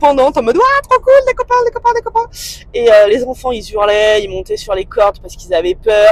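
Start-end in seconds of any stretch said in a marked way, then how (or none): 0.6-2.3 very high, fast, overjoyed giddy dog voice. Telling how your dog ran among the children, imitating an overjoyed dog. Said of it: "Il était trop content, il courait partout".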